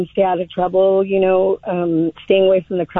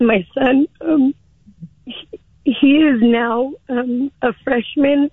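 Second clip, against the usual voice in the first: higher, slow, emotional, voice catching. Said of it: "Sorry, I get super emotional".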